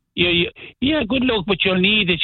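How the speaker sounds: small, high, little voice. Retelling her reply when asked to wish him luck: imitating her little voice. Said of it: "with her, her little voice".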